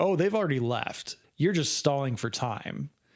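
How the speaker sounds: usual speaking voice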